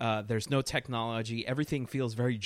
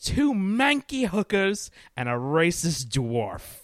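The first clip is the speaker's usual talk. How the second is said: loud, big, swooping, drawn-out delivery; 5 semitones higher, 7 dB louder than usual. Quoting a favorite film character's line: imitating Ken's line. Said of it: "I just love the way he says that".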